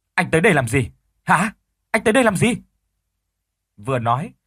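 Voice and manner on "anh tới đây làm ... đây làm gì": sharp, high, hostile, accusing, angry snap. A woman suddenly looks at a man and snaps angrily at him. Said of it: "bà ta gắt lên".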